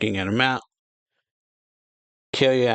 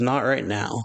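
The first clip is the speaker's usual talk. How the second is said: ordinary delivery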